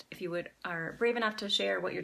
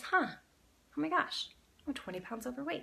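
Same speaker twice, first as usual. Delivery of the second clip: curious, inquisitive, higher pitch; 7 semitones higher than usual. Speaker demonstrates one sentence said with different emotions; curious. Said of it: "Say it as curious".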